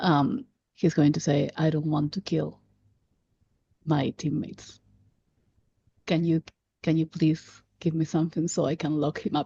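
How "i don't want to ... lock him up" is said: very slow, deep gravelly voice, quieter. Voicing a character who speaks while looking at the camera: very slow, deep gravelly voice. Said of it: "very slowly, considering that he has this very deep voice, low and gravelly".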